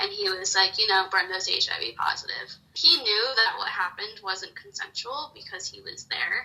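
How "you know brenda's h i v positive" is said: ordinary delivery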